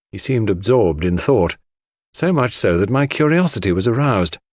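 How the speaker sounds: plain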